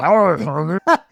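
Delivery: loud comic-book monster voice. Reading a comic line aloud again: Venom voice. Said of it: "I'm gonna say it like Venom".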